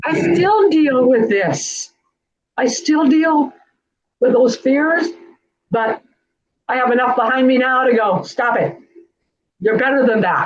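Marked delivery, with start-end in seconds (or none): 0.0-5.1 slightly teary, welling up. Talking with a friend about old fears, the speaker gets a little teary. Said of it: "I'm getting teary here a little".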